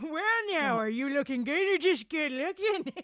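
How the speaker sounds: put-on very old man voice. A game master voices a very old man addressing the fairy prince, in a very old man's voice. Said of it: "and a very old man who wobbles in the crowd. / The old man bounces his overgrown eyebrows at [name] and he chuckles a bit. / the old man responds".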